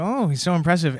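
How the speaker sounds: normal talking voice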